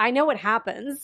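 joking, teasing delivery. Retelling their answer when asked if they had started it, retelling a joking reply. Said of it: "And I jokingly said".

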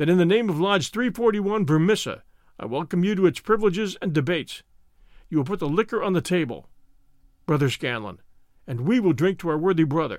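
plain

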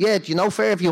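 put-on part-Dublin accent. Retelling what a man at a gig said: imitating a half dublin accent. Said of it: "kind of a half Dublin accent".

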